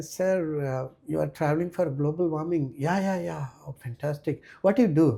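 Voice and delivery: put-on, very sarcastic, feigned impressed, heavy questioning tone. Speaker retells questioning bikers traveling for global warming, retelling own sarcastic question. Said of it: "I asked them in a very sarcastic way".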